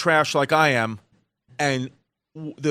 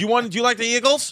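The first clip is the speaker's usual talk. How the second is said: put-on Philadelphia accent, higher pitch; 7 semitones higher than usual. Trying out accents with others in conversation: Philly accent. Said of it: "the Philly accent is".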